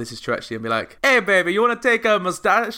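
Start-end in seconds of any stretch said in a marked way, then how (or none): 1.0-2.8 poor fake Italian accent, pitched up. Acting out Mario talking to girls in a club, in a bad Italian accent. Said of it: "Can't do Italian accent".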